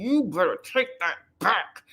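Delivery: slow, words forced through a clenched jaw. Speaker retells what Tamar said to Trina: retelling a line through gritted teeth. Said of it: "she says it like through her teeth".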